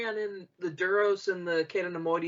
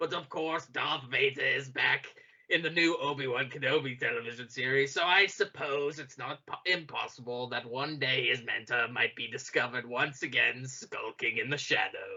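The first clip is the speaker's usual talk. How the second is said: put-on sinister villain voice, lower pitch; 5 semitones lower, 3 dB quieter than usual. Reading an interview answer aloud: Palpatine voice. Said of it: "Palpatine just always talks like this".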